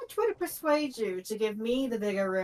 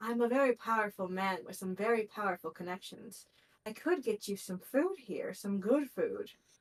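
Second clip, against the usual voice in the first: secretive, confiding stage half-whisper; 3 dB quieter than usual. Acting out a man who leans in toward the speaker, retelling his half-whisper. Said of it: "he kind of whispers".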